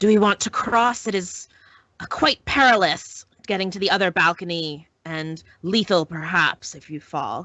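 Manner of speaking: words hissed out in a hissing voice. A game narrator voices a character leaning into a doorway, hissing voice. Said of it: "you just hear her hissing voice say".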